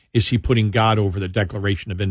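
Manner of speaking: ordinary delivery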